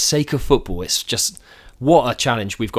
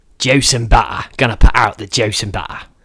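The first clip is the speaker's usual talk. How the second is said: slow East London Cockney accent; 4 dB louder than usual. Asked for their best cockney, speaker says the phrase in a cockney accent. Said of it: "that's good Cockney".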